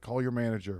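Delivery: mock screaming, yelling voice. Retelling a customer with broken glasses, imitating a customer screaming. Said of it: "while he was screaming at me".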